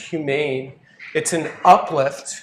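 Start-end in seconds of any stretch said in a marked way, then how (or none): 0.0-0.7 humane stressed on last syllable. Explaining humane versus human, stress on last syllable of humane. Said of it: "by putting the accent on the end".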